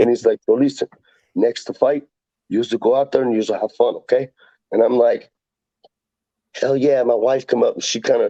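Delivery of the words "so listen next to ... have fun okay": put-on Brazilian accent on English words. Fighter retells his brazilian coach's talk before a fight: brazilian accent. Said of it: "Of course, I got to do the accent".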